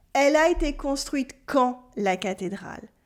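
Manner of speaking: ordinary talk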